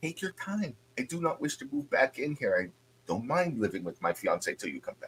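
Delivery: very quiet voice dropped to a hush. A host welcoming guests into her home: lowered voice. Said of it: "she kind of lowers her voice and looks around".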